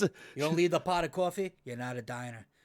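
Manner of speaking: put-on New Jersey accent. Listing what makes a real diner, the speaker throws in a New Jersey accent. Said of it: "really throw the Jersey accent in there".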